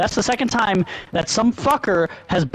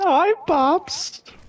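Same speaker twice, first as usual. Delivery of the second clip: very high, squeaky, terrible put-on cartoon voice; 10 semitones higher than usual. Answering the others in a bad Pops impression. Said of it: "That was the worst Pops impression I've ever heard".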